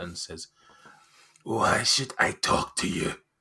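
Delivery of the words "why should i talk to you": booming giant-like voice. Game master voicing a woman answering the players, in a giant-like voice. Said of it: "Why do you sound like a giant?".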